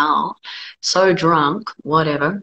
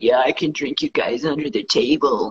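lousy, shoddy put-on Albuquerque accent; 4 semitones lower than usual. Telling a story about drinking with Kiwis, quoting a guy from Albuquerque in a bad Albuquerque accent. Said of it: "That was a shit Albuquerque voice".

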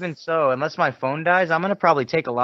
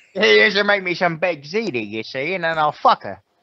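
put-on old movie mobster voice; 3 semitones higher than usual. Joining another speaker's bit, a speaker does an old movie mobster voice. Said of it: "Mobsters in a fucking movie".

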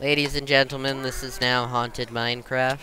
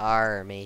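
put-on pirate voice, lower; 4 semitones lower than usual. Answering a mention of the pirate button box: pirate voice. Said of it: "The pirate button box".

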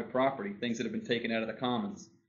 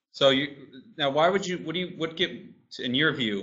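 loud, flustered, stumbling stutter with stammering restarts; 4 semitones higher, 5 dB louder than usual. Speaker putting a question to someone about their view, stuttering. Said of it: "I'm stuttering here".

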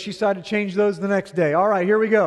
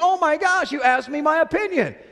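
high, acted, retorting shout; 8 semitones higher than usual. Acting out a husband's argument with his wife: acted yelling. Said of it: "Why are you yelling at me?".

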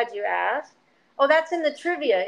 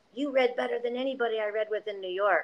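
close-in, soft, hushed stage whisper; 6 dB quieter than usual. Retelling what a fellow actor half-whispered after a reading: imitating a half-whisper. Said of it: "whispered that in my ear".

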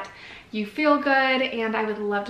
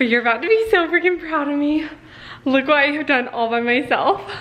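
winded, raised voice, catching breath between words; 4 semitones higher, 6 dB louder than usual. Vlogging after setting up a Christmas tree by herself, out of breath. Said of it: "I'm out of breath".

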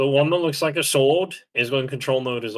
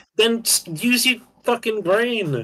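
yelling, much higher pitch; 9 semitones higher than usual. Arguing with someone who missed what was said: yelling. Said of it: "Stop yelling".

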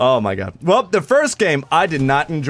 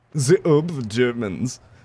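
put-on stock German accent; 3 dB quieter than usual. Naming an enemy player during a match: stereotypical german accent. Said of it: "I never knew I could do a German accent".

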